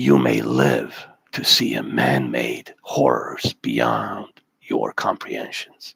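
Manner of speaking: snake-like hiss through the words, creaky. Reading a quote aloud to viewers in a hissing snake voice. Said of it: "I'm going to read it in a snake voice".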